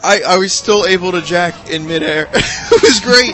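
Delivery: high, loud laughing fit, cracking up while talking.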